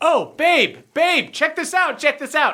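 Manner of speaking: very high-pitched, excited, eager, thrilled gushing. Game master voices Derlin calling to someone he calls babe, very excited. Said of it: "very excited".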